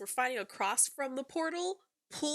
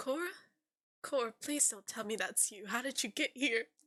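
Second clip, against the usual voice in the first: put-on Southern drawl; 3 dB quieter than usual. Retelling how he reacted on seeing Cora, Rick accent from Walking Dead. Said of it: "his accent? It was like that".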